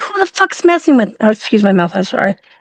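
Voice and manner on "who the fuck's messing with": put-on angry shout, higher pitch. Retelling getting mad after a scare in sick bay: retelling own angry yell. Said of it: "I screamed, and I got mad".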